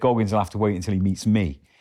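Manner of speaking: ordinary talk, nothing marked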